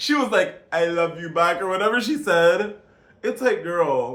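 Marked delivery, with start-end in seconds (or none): 0.7-1.6 imitated Spanish accent.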